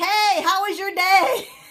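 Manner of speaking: very high, loud yelling voice. Speaker who works with hard-of-hearing people recalls greeting the kid at home, retelling yelling. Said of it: "they want to know why I'm yelling at them".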